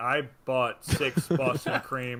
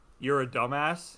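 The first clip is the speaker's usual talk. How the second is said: put-on condescending, mocking tone. Retelling how the drive-thru lady answered the order: imitating a condescending tone. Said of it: "but she said it like".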